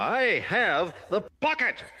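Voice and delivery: angry, mad delivery through gritted teeth. Generated voice clip played back after a prompt, angry through gritted teeth. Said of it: "He is mad".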